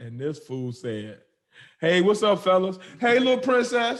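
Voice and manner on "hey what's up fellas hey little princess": friendly, loud, high-pitched holler. Telling a story, the speaker acts out a man calling to passersby: imitating Doctor Umar yelling out. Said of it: "he yells out at two dudes and a little girl".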